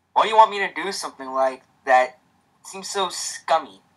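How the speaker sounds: ordinary delivery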